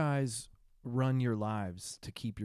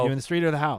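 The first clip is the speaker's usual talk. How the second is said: plain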